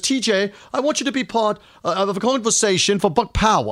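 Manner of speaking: put-on London suburbs English accent. Introducing an upcoming guest, quoting Paul Stewart's invitation in a British accent. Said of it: "I'll do my British accent".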